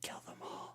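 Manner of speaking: hushed, breathy, barely voiced whisper. Voicing a visitor at the door who speaks quietly: quiet voice.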